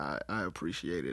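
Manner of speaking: shaky, very low, hushed, slow, emotional voice. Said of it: "my voice is gonna be shaky".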